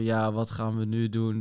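exaggerated slow monotone, no fluctuation at all. Speaker imitating how his own speech sounded to him, mimicking slow monotone. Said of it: "zo monotoom, zo langzaam".

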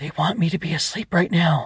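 loud stage whisper, high pitched. Reading a story: Ava, asked to speak up, answers in a loud whisper. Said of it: "whispered loudly".

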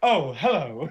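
loud, camp, affected tone. Mocking a supposedly terrifying warlord: camp imitation of Andreas Katsoulis. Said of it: "he's got this kind of inherent campness about him".

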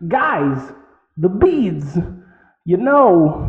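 very slow, drawn-out delivery, know stretched. Quoting Deming as if played by Christopher Walken: Christopher Walken impression. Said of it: "played by Christopher Walken".

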